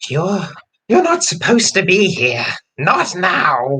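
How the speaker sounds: slow, high, hostile snarl. Narrator voicing a woman confronting the nearest person, snarling. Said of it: "locks eyes with the nearest person and snarls".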